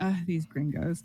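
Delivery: muttering under breath. Storyteller voicing a woman who doesn't recognize the listener's voice, muttering. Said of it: "she mutters in Spanish".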